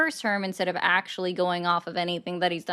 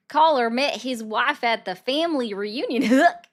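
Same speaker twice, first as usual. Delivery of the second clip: mock Southern drawl, higher and louder; 6 semitones higher, 5 dB louder than usual. Reading a viewer's message aloud, joking: put-on southern accent. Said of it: "let me try to read this in my best impersonation".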